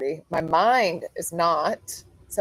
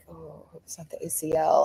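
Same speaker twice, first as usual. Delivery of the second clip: quiet, soft, hushed half-whisper; 6 dB quieter than usual. Retelling how others around reacted to a knee injury: imitating people half-whispering. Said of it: "everyone's kinda whispering a little bit".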